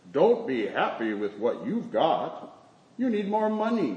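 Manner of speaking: slow cow voice, moolah drawn out. Telling a sheep parable, voicing a cow calling from the neighboring pasture. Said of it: "We hear a cow in the neighboring pasture call out".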